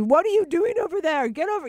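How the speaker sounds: very high-pitched, loud screaming. Retelling how a man at the airport screamed at the speaker, imitating a man screaming. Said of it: "He's screaming at me".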